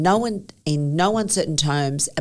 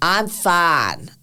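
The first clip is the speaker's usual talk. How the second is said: put-on American accent, heavily exaggerated; 3 semitones higher, 4 dB louder than usual. Retelling Rob refusing to go up in the stadium: big American accent. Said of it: "said in his big American accent".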